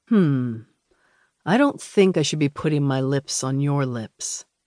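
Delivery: sensual, low, slow voice dipping down. A man replies to a woman who offered him a sip, sensually low voice. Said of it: "his voice dipping sensually low".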